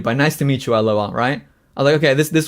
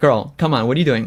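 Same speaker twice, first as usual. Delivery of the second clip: put-on goofy, playful, dismissive tone. Retelling own earlier reply to her: imitating own goofy tone. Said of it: "I was playing it off, like, goofy".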